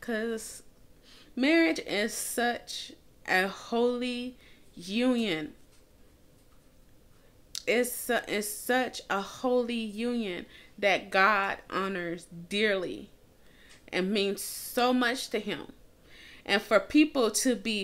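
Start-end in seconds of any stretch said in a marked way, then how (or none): 0.0-15.7 voice catching and choking up, near tears. Speaker talking about marriage as a holy union, choking up. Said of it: "I'm about to cry".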